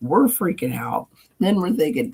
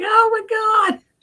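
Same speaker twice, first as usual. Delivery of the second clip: mock crying puppy voice, higher. Retelling how the puppy reacted to the joke: imitating Frank crying. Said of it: "Frank's crying now. He's like".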